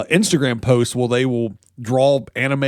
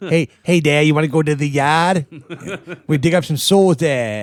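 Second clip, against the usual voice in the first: really bad, clumsy, put-on Boston accent; 2 semitones higher than usual. Voicing a Boston Satan character: really bad Boston accent. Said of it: "That's my really bad Boston accent".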